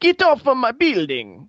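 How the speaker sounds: put-on very high, swooping Italian mafia accent. Mocking the game's italian dialogue, imitating mafia characters. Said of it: "sounds like a bunch of mafia characters going".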